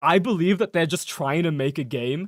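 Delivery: plain reading voice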